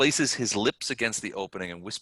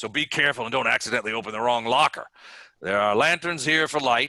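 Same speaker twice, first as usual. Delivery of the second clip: loud, gruff, gravelly, rough-edged orc voice; 4 semitones higher, 5 dB louder than usual. A storyteller voices an orc speaking to the group, in a gruff, gravelly orc voice. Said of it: "says with a gruff and gravelly voice".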